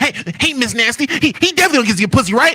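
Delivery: put-on old animated cartoon pig voice. Mocking a commenter who writes to Miss Nasty: Porky Pig voice. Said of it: "Why you make him sound like Porky Pig?".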